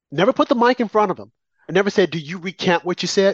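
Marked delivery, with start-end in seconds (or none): none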